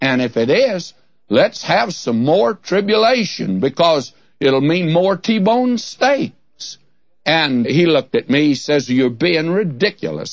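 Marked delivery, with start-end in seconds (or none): 8.9-10.3 put-on scornful, superior, disdainful British accent. Retelling a man's reply to the speaker, imitating disdainful British voice. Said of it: "he said it in that British disdainful voice".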